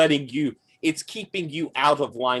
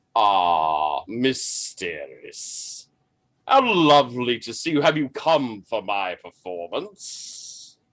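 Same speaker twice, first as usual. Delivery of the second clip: beautiful, deep, sonorous, ringing voice with long Ah. Voicing an actor greeting Miss Steris: beautiful deep resonant voice. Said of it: "a voice so beautiful, so deep and resonant".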